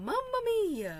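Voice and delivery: very high, put-on cartoonish character voice. Speaker feeling nostalgic does the Mario voice. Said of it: "I shall do the Mario voice".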